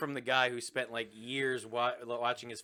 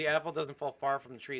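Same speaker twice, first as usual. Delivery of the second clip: plain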